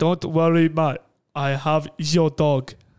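imitated Russian accent. Retelling what a big Russian bloke said after grabbing Billy the dog: Russian accent. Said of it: "that's a Russian accent, isn't it?".

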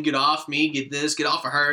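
distraught screaming in alarm. Retelling a movie scene where she pushes the love interest away: imitating someone screaming. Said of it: "she started screaming".

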